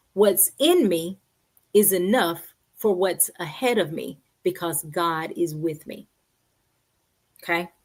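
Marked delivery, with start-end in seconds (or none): 0.2-6.1 slow, deliberate, each word laid down carefully. Repeating a morning affirmation for listeners to say aloud: said again slowly. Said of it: "I'm gonna say that again slowly".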